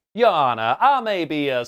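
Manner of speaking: put-on Southern drawl. Imagining what the Joker would do as a Southern lawyer; Joker in a Southern drawl. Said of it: "he adopts a Southern drawl".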